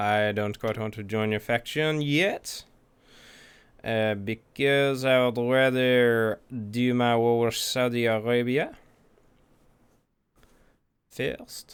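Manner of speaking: English speech drifting into a French accent. Declining to join someone's faction yet, slipping into a French accent. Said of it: "Why am I getting a French accent?".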